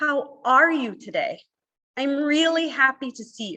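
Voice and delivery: slow, simple, every word carefully over-enunciated. Speaker showing how they talk so everybody can follow: slow, over-enunciated. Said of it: "speak slowly and simply, and I'm going to over enunciate".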